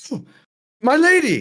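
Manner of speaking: gasping, high and loud shocked cry.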